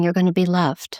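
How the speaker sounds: ordinary talk, nothing marked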